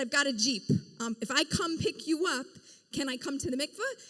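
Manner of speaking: ordinary talk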